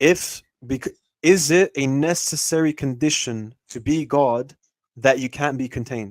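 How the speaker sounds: very slow, deliberate, each word spaced out. Repeating a question for a brother who asked to hear it again: very slowly. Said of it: "I'm going to say it very slowly for you".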